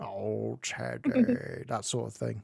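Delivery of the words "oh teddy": comic exclamation, pitch swinging widely, voice creaky. Quoting lines from episodes of the show: Mr. Bean voice. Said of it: "there have been episodes where he goes like".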